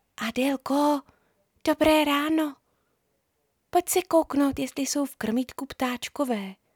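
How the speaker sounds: whispering. A girl wakes her friend on a Saturday morning, whispering. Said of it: "ale pak kamarádku šeptem vzbudila".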